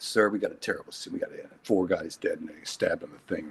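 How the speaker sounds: mock very quiet, low, offhand, list-like throwaway read. Recalling how he played a scene line as advised, retelling a throwaway delivery. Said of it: "Like it was nothing".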